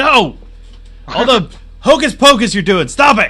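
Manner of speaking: very loud, high-pitched scolding holler. A barkeep scolds patrons doing magic at the bar, shouting across the bar. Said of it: "and he's a pretty burly-looking dude, / and he's a pretty burly-looking dude, and he leans forward and he says, "'Cause I like to read." Oh, right. So he likes to read, so it's called the Bookbinder's".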